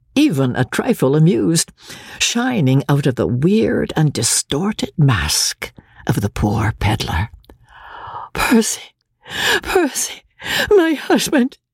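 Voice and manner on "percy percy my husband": very high, faint, gasping cry of joy. Reading a novel, Marguerite finds her husband Percy, gasping, faint with joy. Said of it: "she gasped, faint with the fullness of her joy".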